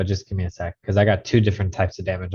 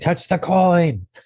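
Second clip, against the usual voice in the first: put-on very high yell; 10 semitones higher than usual. Calling out in character to another party member: yelling in character. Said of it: "I yell to Bigus and I say".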